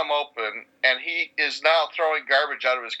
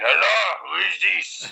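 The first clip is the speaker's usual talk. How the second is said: put-on rough, creaky slurred voice; 4 semitones higher than usual. Answering a kid's call so he never calls again, doing a drunk Miguel voice. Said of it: "my drunk Miguel voice".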